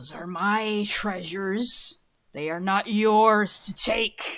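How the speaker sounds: hissed, spectral, ghostly voice. Describing a ghost taking shape, the speaker voices it in a hissing ghost voice. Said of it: "And it hisses".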